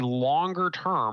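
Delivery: both longer and term strongly stressed. Speaker advising listeners on trades, stressing longer term. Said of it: "emphasis on the word longer".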